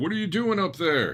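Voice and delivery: high-pitched, shrill yelling. Voicing a guy who comes out and yells at someone up on a roof: yelling up at someone. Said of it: "some guy comes out and yells at you".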